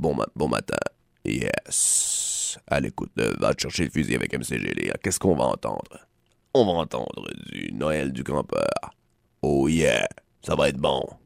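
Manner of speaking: FM radio voice. Introducing the cult track Noël du campeur, the speaker puts on an FM radio voice. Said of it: "je peux prendre une voix FM".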